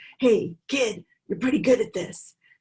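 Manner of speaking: kind of gruff, brusque tone. Retelling what another speaker said to him after his program, imitating a gruff voice. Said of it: "said in kind of a gruff voice".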